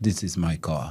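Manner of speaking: low, quiet, mock European accent.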